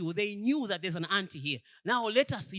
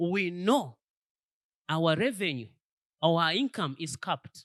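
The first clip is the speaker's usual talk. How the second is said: very slow, deliberate, every word drawn out; 3 semitones lower than usual. Speaker repeating an earlier point to the audience, saying it very slowly. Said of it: "I'm going to say it very slowly".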